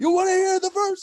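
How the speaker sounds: very high, hyped-up call, pitched way up. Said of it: "they would hype the crowd again".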